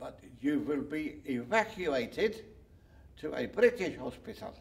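slow put-on German accent. Retelling what a man at a German field hospital told him, imitating German accent. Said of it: "[imitating German accent]".

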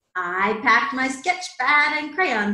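ordinary delivery, nothing marked

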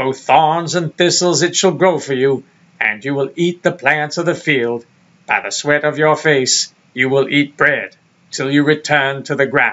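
put-on godlike narrator voice. Rereading the scripture passage as God, imitating Morgan Freeman. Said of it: "me doing Morgan Freeman".

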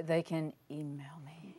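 very quiet, soft, hushed. Guest answering the interviewer's question, saying it very quietly. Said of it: "You said that very quiet".

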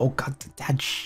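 soft, hushed shushing. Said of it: "I was like".

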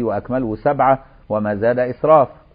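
ordinary delivery

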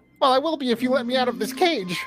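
very high, tiny fairy dragon character voice. In a game, voicing a little fairy dragon speaking to the player: fairy dragon voice. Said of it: "there is a little fairy dragon".

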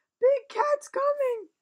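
very loud, high, shrill frightened wail. Reading a story aloud, Henry wailing. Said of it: "he didn't say it like that. If he wailed it".

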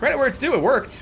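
ordinary talk, nothing marked

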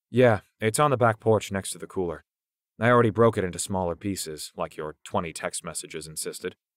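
plain

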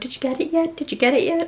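mock-panicked repeating. Retelling standing in the yard, the speaker reenacts anxious, repeated questions. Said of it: "I was like standing in the yard going".

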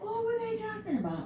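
high, swooping, puzzled wonder.

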